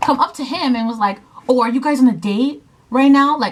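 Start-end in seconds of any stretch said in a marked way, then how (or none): 1.5-3.4 hostile, angry, accusing, challenging tone. Retelling what a guy at the club asked: imitating an angry question.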